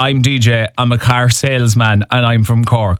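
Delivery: normal talking voice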